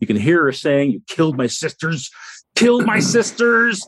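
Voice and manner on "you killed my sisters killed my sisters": high, hoarse, shrieking creature cry. Game master voices an injured harpy, shrieking. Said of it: "she's shrieking".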